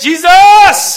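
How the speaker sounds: crying out at full volume. Retelling a blind man calling out to Jesus: crying out at full volume. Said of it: "Now he turned into the volume".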